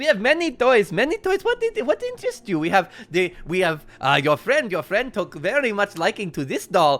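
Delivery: loud, high-pitched, swooping sing-song voice. Voicing a jester showing toys on shelves: Blinsky voice. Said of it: "he starts, like, gesturing toward the shelves".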